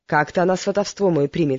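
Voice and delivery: plain reading voice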